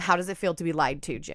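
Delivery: ordinary talk, nothing marked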